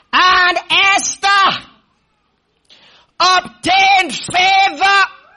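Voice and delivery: slow, high shouted proclamation.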